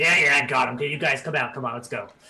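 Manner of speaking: put-on grumpy middle-aged clown voice. Voicing a clown who ushers the players out: grumpy clown voice. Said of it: "grumpy, like, middle-aged clown".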